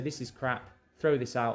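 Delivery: ordinary delivery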